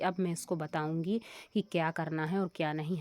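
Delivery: ordinary talk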